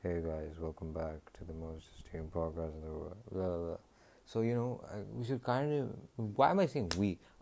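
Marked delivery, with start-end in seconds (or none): 0.0-3.8 deep, soft, glum, dreary, depressing voice. Imagining a podcast intro that comes after the chime, depressing deep voice. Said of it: "a depressing, deep voice".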